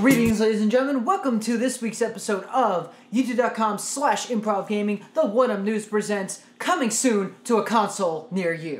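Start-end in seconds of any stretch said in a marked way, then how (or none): 0.0-1.0 powerful, forceful, loud delivery. Opening the episode by greeting the audience: forceful. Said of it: "Very forceful".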